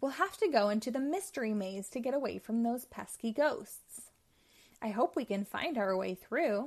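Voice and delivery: ordinary talk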